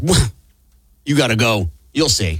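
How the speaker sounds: mock contemptuous tone. Retelling how a colleague sent him on a task: imitating Gimpy's contempt. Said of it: "the contempt in his voice".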